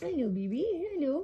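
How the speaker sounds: put-on cooing, rising sing-song baby talk.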